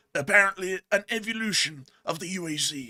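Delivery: nature documentary narrator voice. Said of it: "my best David Attenborough voice".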